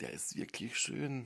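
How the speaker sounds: very quiet, hushed, reluctant, grudging remark. Speaker says they will only say this very quietly: very quiet. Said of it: "ich sag's auch nur ganz leise".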